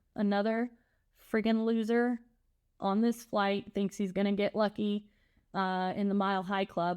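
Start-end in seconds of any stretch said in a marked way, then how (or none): none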